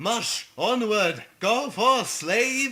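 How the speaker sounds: put-on funny, very loud, very slow, drawn-out Australian kid accent. Retelling what a kid on the lazy river said: imitating a kid's funny Australian accent. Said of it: "has the funniest accent I've ever heard".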